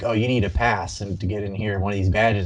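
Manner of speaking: ordinary talk, nothing marked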